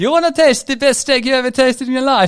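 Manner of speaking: clumsy put-on Italian accent, very high and loud. Retelling an Italian man's words at a friend's urging, attempted Italian accent. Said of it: "true Italian with the accent".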